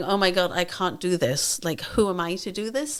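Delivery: put-on crying with tearful despair. Retelling lying on the sofa over the seventh book: imitating own past crying. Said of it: "I was literally just lying on my sofa crying, going".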